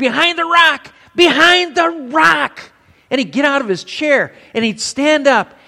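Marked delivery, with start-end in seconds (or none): 0.0-2.7 very high, shrill, insistent, drawn-out yelling. Retelling a drunk father's Western-night outburst: imitating father yelling at TV. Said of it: "he starts yelling at him".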